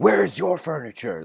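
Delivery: harsh, rough, very high, chaotic, intense shout. Storyteller voices a dervish answering a merchant, retelling a shout. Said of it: "Like just shouts at this guy".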